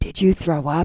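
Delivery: hushed whispering. Reading a story aloud, the mother asks her son in church, whispered. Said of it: "His mother whispered".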